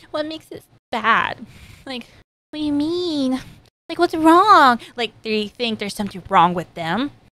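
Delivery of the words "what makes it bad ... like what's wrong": play-acted meek, timid voice, pitched up, submissive. Acting out how another person takes critique: imitating a meek person. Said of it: "kinda meek and they just take it".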